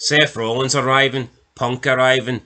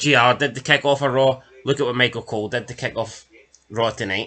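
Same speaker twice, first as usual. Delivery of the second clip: usual speaking voice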